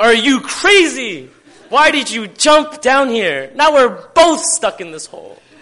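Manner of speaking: incredulous, disbelieving exclamation.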